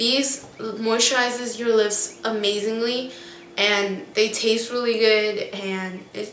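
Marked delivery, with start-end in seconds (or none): none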